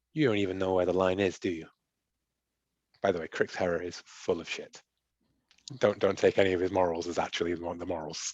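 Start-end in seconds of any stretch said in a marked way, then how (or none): 0.1-1.6 dry, dismissive character voice, quieter. Voicing a character who ignores a player, just looks and answers: dry Crix Herrera line. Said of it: "He's just dry".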